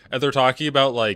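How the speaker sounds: ordinary talk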